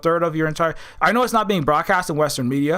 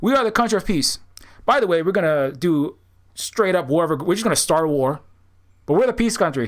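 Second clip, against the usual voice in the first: ordinary delivery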